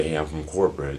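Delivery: ordinary delivery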